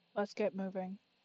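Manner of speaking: utter monotone, low, hushed and barely audible. A game narrator voices the characters sitting with her, in a flat monotone voice. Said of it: "In the most monotone voice ever".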